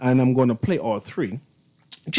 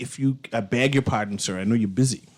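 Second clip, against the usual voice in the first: ordinary talk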